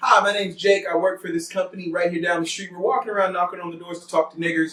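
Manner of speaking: plain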